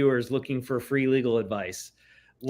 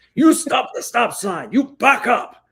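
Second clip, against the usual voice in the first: very high, loud, shrieked screaming; 10 semitones higher, 7 dB louder than usual. Retelling how a man jumped out of a booth and screamed at the car behind, retelling a man's screaming. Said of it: "started screaming at the car behind us".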